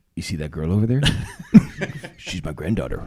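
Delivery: put-on very low, elderly voice. Retelling a friend's favourite impression: old guy from Home Alone impression. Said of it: "His best impression is the old guy from, uh, Home Alone".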